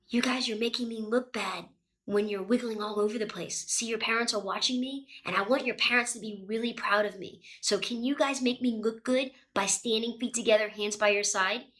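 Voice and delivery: soft, quiet voice.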